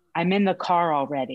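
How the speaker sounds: plain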